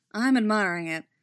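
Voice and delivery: ordinary delivery, nothing marked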